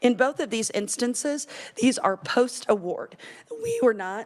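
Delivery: voice breaking and cracking mid-sentence. Presenter walking through a slide of success stories, voice cracking. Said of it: "my voice is cracking again".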